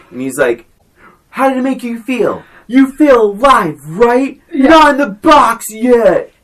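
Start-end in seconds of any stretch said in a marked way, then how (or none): 1.3-6.3 fired-up, loud, pitched-up yelling. You are acting out Ken Reeves' tough dialogue at Gary Busey, imitating Ken Reeves yelling. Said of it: "when he's yelling at Gary Busey".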